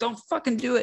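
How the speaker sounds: put-on panicked freak-out, very high pitched. Discussing a story, the speaker acts out a man, imitating someone freaking out. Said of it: "he's like freaking out".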